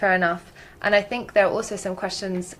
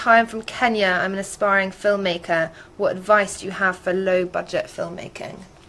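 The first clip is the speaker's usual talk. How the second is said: ordinary talk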